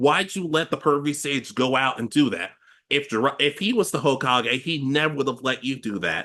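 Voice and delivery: ordinary talk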